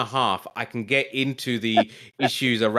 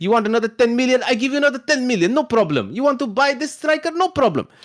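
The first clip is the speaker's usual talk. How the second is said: put-on Arabic accent with a very high voice; 13 semitones higher, 5 dB louder than usual.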